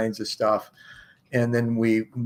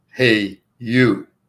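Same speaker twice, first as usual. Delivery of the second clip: big booming male voice, louder; 7 dB louder than usual. Retelling a dark night on the porch when a voice suddenly called out: big booming male voice. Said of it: "big booming male voice simply say".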